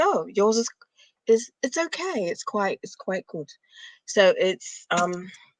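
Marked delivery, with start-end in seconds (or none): 0.0-3.5 put-on English accent, Englishman's voice. Retelling what an English speaker said about her accent: imitating an English accent. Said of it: "an English accent, and he was like".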